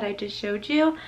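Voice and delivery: ordinary talk, nothing marked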